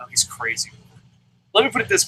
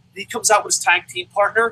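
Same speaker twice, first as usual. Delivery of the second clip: normal talking voice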